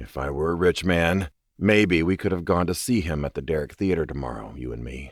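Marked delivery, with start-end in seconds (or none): none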